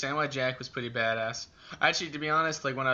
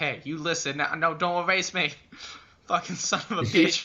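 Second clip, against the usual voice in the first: classic cartoon duck character voice; 3 semitones higher, 4 dB louder than usual. Recalling a Chuck Jones cartoon scene: Daffy Duck voice. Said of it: "with Daffy Duck, where he's like".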